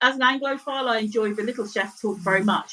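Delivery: ordinary delivery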